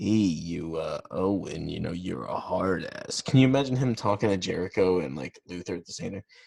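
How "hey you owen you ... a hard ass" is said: slow, deliberate drawl. Imitating a wrestling trainer talking to his son: imitating Stu Hart. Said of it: "he talks like".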